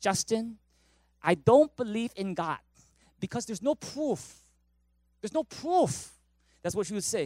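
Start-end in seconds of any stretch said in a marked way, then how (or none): 0.0-6.1 put-on heavy German accent laid on thick. Quoting a woman who grew up partly in Germany: heavy German accent. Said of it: "she had a very heavy German accent".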